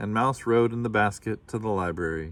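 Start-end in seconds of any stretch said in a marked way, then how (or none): none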